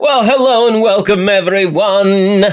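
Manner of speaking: put-on old-world vampire voice with Transylvanian accent. Replaying the other speaker's intro, in the Count's Transylvanian accent. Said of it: "Can we hear that intro again?".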